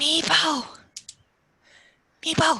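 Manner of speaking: projected stage whisper. Calling out a name in the game; shout-whisper. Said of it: "I'm like shout whispering this".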